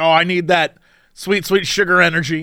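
plain

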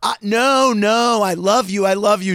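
mock drawn-out, insistent, earnest screaming. Retelling a reply to a woman on stage: imitating himself screaming. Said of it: "so I'm screaming at her".

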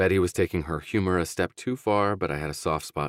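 ordinary delivery

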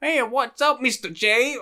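put-on very high, thick, over-the-top Jersey accent. Imitating a movie character who sounds like Harley Quinn: Harley Quinn voice. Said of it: "it sounded a lot like Harley Quinn".

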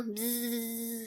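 gentle, deep buzzing like a bee. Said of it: "since the bees go".

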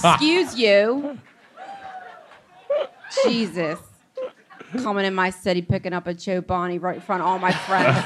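put-on swooping, sing-song local Philadelphia accent. Joking with friends about someone buying Chobani at Wawa, in a Philly accent. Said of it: "god the philly accent is oh my god".

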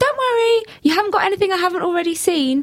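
shouting in a put-on man's voice. Retelling what a man in the gym changing room said: imitating a man shouting. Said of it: "he started shouting".

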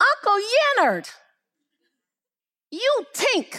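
put-on very high, tiny three-year-old toddler voice. Retelling what a 3-year-old said to Uncle Leonard, in his little 3-year-old voice. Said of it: "in his little 3-year-old voice".

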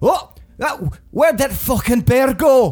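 put-on cranky, slightly drunken-sounding voice. A game narrator voices a dwarf calling from the back, in a cantankerous, drunken-sounding voice. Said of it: "a very cantankerous-sounding voice, a little drunken-sounding".

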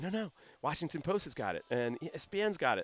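ordinary talk

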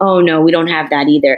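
ordinary delivery

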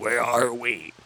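tiny demonic voice, very hushed, barely audible. Retelling the story of Angela found by a farmer's son, little demonic voice. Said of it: "in a little demonic voice".

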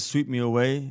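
ordinary talk

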